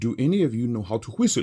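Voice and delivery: put-on slight Polish accent. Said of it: "I did his accent a little bit".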